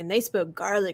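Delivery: put-on Scottish accent. Retelling how a Scotsman said Gaelic: imitating a Scottish accent. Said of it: "I swear with his accent".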